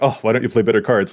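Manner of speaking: normal talking voice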